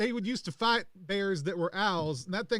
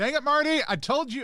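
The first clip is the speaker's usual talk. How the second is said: overloud talking, much louder than needed, pitched up; 6 semitones higher, 5 dB louder than usual. After a fight, ears still ringing, the speaker is talking way too loud. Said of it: "I'm also talking way louder than I need to".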